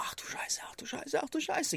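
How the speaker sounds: whispered, panicked muttering. Speaker retelling walking further in and panicking, acting out past panic. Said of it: "mein Herz rutscht mir so in die Hose".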